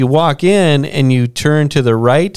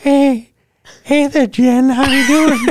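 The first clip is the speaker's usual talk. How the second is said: very high-pitched cartoon character voice; 11 semitones higher than usual. Asked for the go-to voice, greeting Jen: Family Guy voice. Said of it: "What's that Family Guy voice?".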